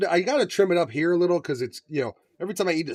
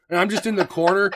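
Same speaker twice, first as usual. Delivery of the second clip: normal talking voice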